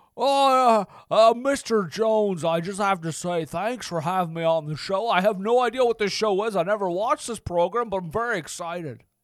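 stumbling, uh-filled, hesitant impression delivery. Playing a guest thanking the host for having him on the show: Jimmy Stewart impression. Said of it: "Thank you very much for being here, Jimmy Stewart".

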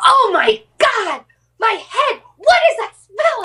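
mock frantic freak-out, very high, swooping pitch. Recounting the boyfriend's reaction from the bedroom, the speaker acts him out: imitating Daniel freaking out. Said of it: "comes running in and he's just like".

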